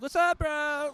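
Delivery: very high-pitched, loud Valley-style voice. Speaker musing on which voice to use, trying Valley voice. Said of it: "go back to like Valley voice".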